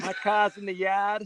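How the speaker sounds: dropping the R sounds. Showing the other speaker how to fake the accent, in a fake Massachusetts accent. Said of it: "when you fake the the Massachusetts accent".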